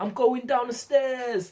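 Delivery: very high, expressive. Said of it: "so many different ways you could say".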